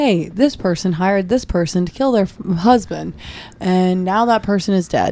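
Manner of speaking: plain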